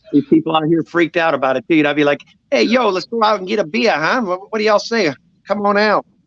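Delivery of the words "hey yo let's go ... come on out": put-on Chicago accent, easy and relaxed. Recalling how he talked after moving from Chicago, Chi-Town accent. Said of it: "I had a Chi-Town accent".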